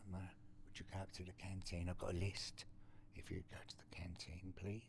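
very quiet, breathy whisper with eerily polite tone. Imitating how a polite prison inmate asked for canteen errands: soft-spoken. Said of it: "softly like that?".

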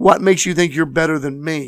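mock snide, sarcastic, judgmental tone. Acting out the believers who challenge the bride: imitating a very judgmental tone. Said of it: "It's a very judgmental".

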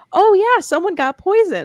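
mock casual, offhand tone, very high and swooping. Retelling how George answered the FBI, mimicking George's offhand tone. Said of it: "like very offhand".

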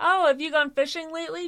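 high, innocent, guileless, casual tone. Speaker retells a man breaking an awkward elevator silence: mock-innocent question. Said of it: "he innocently asks".

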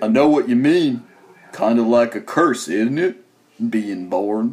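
unhurried, plodding, slow delivery, each word drawn out. Repeating a movie line after being asked to say it as Forrest Gump: Forrest Gump voice. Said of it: "You should have said that as Forrest Gump".

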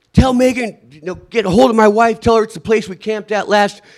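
put-on shouting. Recounting how they kept yelling at a drone; retelling yelling at a drone. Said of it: "And so I was yelling at the drone".

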